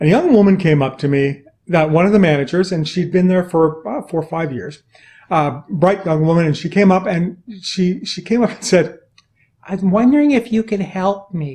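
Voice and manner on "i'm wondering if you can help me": small, slight, tiny little-bitty voice. Retelling a young manager asking for help, the speaker imitates her tiny little voice. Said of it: "a voice that was just a tiny little bitty voice".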